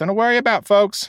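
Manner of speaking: loud high calling out. A hurt man calls out to a concerned crowd, shouting. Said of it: "he shouted above the low din of concern".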